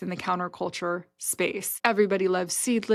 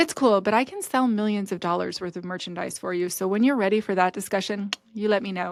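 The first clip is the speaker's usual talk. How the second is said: playful, cheeky, snarky but funny tone. Retelling what was said when walking away: retelling a snarky but funny remark. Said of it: "I said something snarky but funny".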